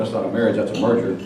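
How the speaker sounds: plain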